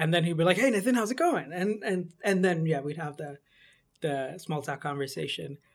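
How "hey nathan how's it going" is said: loud, high, eager, upbeat, enthusiastic tone. Retelling a former boss's greeting: imitating a former boss's enthusiasm. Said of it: "I'm imitating my former boss from Amsterdam with, and his enthusiasm".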